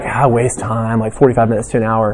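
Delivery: acted, embarrassed, sheepish, ashamed tone. Quoting people who admit wasting time, in a mock-ashamed tone. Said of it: "they'd all say it with kind of a shameful tone".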